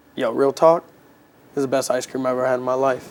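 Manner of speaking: ordinary talk, nothing marked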